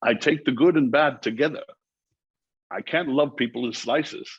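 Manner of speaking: put-on Scottish accent. Quoting a line from a movie, the speaker does a Sean Connery impression. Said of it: "who has the best Sean Connery impression".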